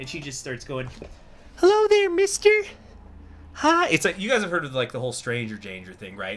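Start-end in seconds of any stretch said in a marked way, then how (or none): 1.6-3.9 put-on very high, loud, squealing little-girl voice. Retelling an audio clip in which a little girl speaks: imitating a little girl's voice. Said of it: "you hear this little girl's voice".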